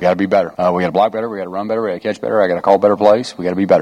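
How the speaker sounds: fast, rapid-fire, rattled-off delivery. An offensive coordinator speaks about his team's play, fast. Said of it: "Said that kind of fast".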